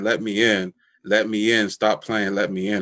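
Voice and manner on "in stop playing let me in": normal talking voice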